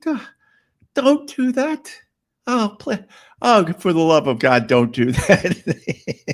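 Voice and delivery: put-on desperate, helpless pleading and begging. Retelling a movie scene where a helpless man begs her: imitating someone begging. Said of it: "He's begging her".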